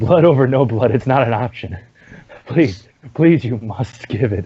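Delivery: creepy little creature voice, begging and pleading. Voicing a character in the game who demands blood, Sméagol-like voice. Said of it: "He sounds almost schmeagly".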